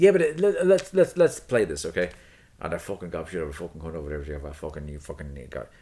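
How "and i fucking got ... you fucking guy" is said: put-on rural country Irish accent in a ranting tirade. Showing how a guy from the countryside curses: imitating an irish countryside guy cursing. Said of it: "that's the Irish guy".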